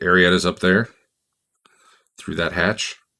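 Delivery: lightly hushed, confiding, secretive tone. Retelling a game scene, the speaker voices a guide at a tunnel's end: retelling a hushed line. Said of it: "he's talking in a really hushed voice".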